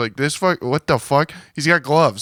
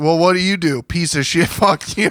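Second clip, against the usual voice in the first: mock angry, lashing-out yelling; 3 semitones higher than usual. Acting out how he yells at the crowd when a joke doesn't hit, imitating someone yelling. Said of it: "he yells at the crowd now".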